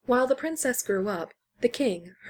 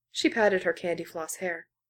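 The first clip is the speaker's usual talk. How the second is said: ordinary delivery, nothing marked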